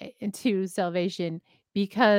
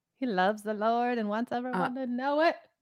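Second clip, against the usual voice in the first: put-on hushed pulpit preacher tone; 3 semitones higher, 5 dB quieter than usual. The speaker describes someone, in a put-on preacher voice. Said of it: "That's my preacher voice".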